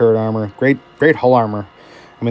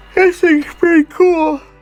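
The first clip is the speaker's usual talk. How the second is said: high-pitched words pulled out of shape mid-yawn; 4 dB louder than usual. Reviewing a tank late at night, yawning while talking. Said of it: "Sorry, I'm yawning".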